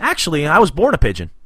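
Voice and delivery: breezy matter-of-fact tone. Retelling how Pete answered April, imitating Pete's nonchalant tone. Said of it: "Pete real nonchalantly goes".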